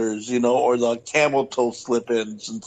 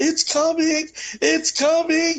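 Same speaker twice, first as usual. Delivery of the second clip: acted, very high, long-stretched shout. Retelling what a skydiver yelled as the ground approached, retelling a yell. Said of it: "she's yelling".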